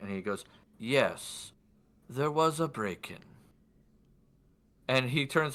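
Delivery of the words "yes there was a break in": measured, unhurried, slow, deliberate delivery. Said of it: "I'm gonna try to do my best for his voice".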